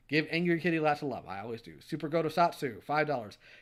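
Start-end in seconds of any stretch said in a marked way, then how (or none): none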